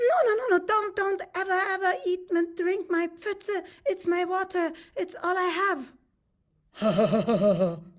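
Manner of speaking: squeaky, high, loud little lady fish voice. Telling a story, voicing the little lady fish protecting her water: little lady fish voice. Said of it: "You have to imagine".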